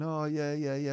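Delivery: mock laughing while speaking. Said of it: "he's probably looking at me laughing, going".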